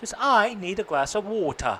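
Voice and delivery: put-on British accent. Teaching how to speak with a british accent, saying an example in a british accent. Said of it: "but you could practice it".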